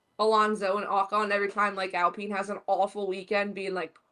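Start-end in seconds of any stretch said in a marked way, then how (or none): none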